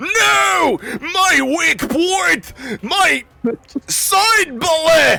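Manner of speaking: very high, very slow, drawn-out, pained howl. Voicing a wounded character in a mock fight: screaming in character. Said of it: "And Balmir starts screaming and says".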